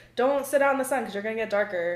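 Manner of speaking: normal talking voice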